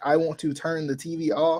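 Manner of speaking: ordinary talk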